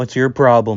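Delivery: put-on angry tone. Recounting an anime flashback, the speaker acts out a character confronting a kid in a mock-angry tone. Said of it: "Like in an angry tone".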